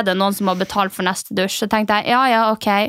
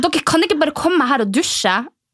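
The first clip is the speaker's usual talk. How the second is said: mock furious anger; 6 semitones higher than usual. Retelling what the angry woman said to them, mock-angry. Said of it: "haka hennes skjelver for at hun er så sur".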